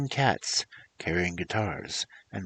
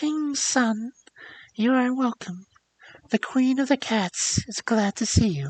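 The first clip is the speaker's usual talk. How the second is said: tiny, sweet little voice, pitched very high; 13 semitones higher, 4 dB louder than usual. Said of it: "in a sweet little voice that went straight to his heart".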